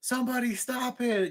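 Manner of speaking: put-on high, yelling outburst in a girl's voice. Speaker retells a fight where a girl sat there yelling: imitating a girl yelling. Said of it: "This girl sitting there yelling like".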